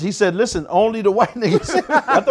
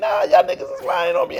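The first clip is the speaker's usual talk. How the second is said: very high-pitched, heated, mad tone. Retelling a denial made while sweating: imitating own past yelling. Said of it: "I'm looking mad 'cause I'm yelling".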